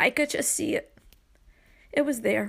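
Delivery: crying voice. Remembering saying goodbye to a mother in hospital, crying while talking. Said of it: "I don't mean to cry my podcast".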